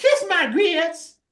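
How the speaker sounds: high, slow southern drawl. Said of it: "Flo had that southern accent".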